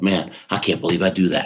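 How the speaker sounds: acted low whisper. Retelling watching the Italians train from the track: imitating his own past whisper. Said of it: "I whispered to myself".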